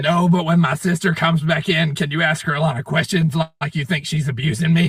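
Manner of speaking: plain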